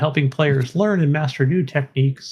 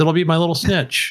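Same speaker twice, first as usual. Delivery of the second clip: ordinary delivery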